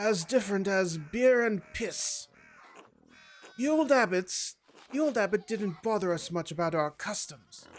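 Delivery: awful, bad put-on British accent. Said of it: "I Make Awful British Voices".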